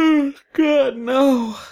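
said through a yawn. Listening to someone recount a story, yawning. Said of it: "Sorry, I'm yawning so much".

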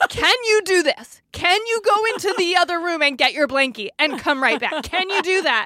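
stronger, firm, stern parent voice. Showing how they spoke to a child walking the wrong way, retelling a firmer voice. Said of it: "using a stronger, firmer voice".

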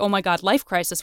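ordinary delivery

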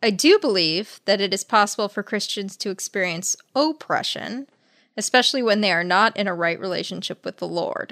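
ordinary talk

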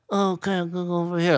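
moody, dramatic modern movie-actor style voice. Mocking how male movie actors talk, Tom Hardy voice. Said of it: "I call it the Tom Hardy".

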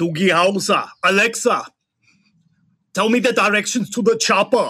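put-on Austrian-accented action hero voice. Doing an impersonation for a guessing game: Arnold Schwarzenegger impression. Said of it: "when I'm doing this particular impersonation".

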